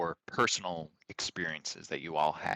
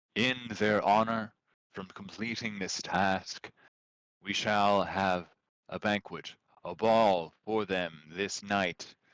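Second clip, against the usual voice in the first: projected, carrying voice filling a great hall; 3 semitones higher than usual. Game master voicing the queen addressing the gathered people, in a projected voice. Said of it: "sort of this voice projected".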